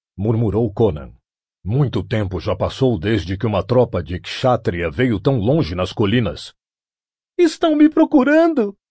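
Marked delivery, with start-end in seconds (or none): 7.4-8.7 very high-pitched, exultant, excited cry. Seeing distant riders in the valley, a woman is exclaiming to her companion. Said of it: "Ela exclamou".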